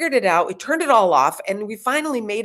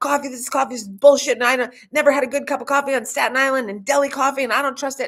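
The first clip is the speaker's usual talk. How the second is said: mock-agitated, upset ranting; 3 semitones higher than usual. Speaker retells what a friend said while ordering, imitating her upset rant. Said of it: "my friend was just like".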